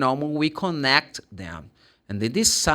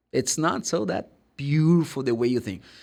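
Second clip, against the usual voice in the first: normal talking voice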